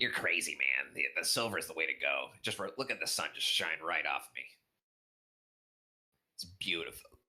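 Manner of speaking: voice-straining put-on dragon voice. Voicing a silver dragon arguing with a brass dragon: strained put-on dragon voice. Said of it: "That one hurts my voice".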